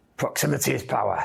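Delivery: rasped out like a theatrical stage guru. Saying a phrase when asked to by another speaker: Tony Robbins voice. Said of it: "That sounds like Tony Robbins".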